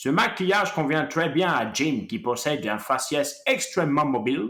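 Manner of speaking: put-on heavy American accent while speaking French. Quoting the prosthetics designer's own words: heavy American accent. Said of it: "je vais même prendre un gros accent américain pour le dire".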